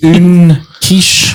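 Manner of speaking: put-on bad French. Retelling ordering a quiche at a counter: imitating own bad french. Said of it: "worst French ever".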